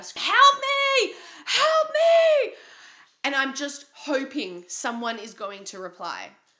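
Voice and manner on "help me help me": long, very loud, very high, drawn-out screams. Retelling being locked in a bathroom and shouting: retelling own screaming for help. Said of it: "I'm just screaming bloody murder".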